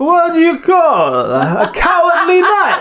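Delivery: put-on Italian accent. Telling a joke after being asked to do Italian: put-on Italian accent. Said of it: "so you have to do, um, Italian".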